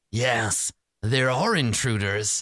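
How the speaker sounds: oily, slithering put-on creature voice. Voicing a being that speaks directly into your mind, in an oily, slithering voice. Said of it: "like oil slithering around in your brain".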